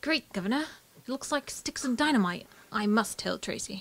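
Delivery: put-on British-accented character voice. Playing a character game, reading a card aloud in a british accent. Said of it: "Is he British?".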